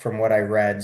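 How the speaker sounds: plain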